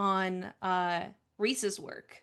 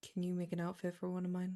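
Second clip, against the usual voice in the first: quiet, soft, very low half-whisper; 2 semitones lower, 9 dB quieter than usual. Playing a character who asks another for an outfit: half-whispering in character. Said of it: "she's going to whisper".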